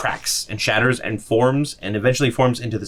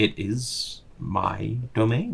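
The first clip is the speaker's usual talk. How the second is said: rumbling, purring creature voice; 6 dB quieter than usual. Voicing a Displacer Beast curled up on a statue, purring, rumbling beast voice. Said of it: "that voice kind of purr out, rumble out through the darkness".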